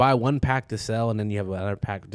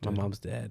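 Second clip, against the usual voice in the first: put-on deadpan, dead-serious tone, quieter; 6 dB quieter than usual. Retelling a classmate's reply to a your-mama joke: imitating a dead-serious reply. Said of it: "with the most serious face".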